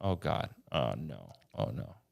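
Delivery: very drawn-out, creaky, exasperated moan. Retelling hearing himself on film as vertigo starts: retelling own frustrated voice. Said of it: "you can hear me kind of getting frustrated".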